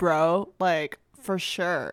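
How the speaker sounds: laid-back, slow coastal California surfer-dude accent. Describing coastal California speech, laid-back surfer-dude accent. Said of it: "that coastal like surfer dude. I've encountered many of those people that speak like this".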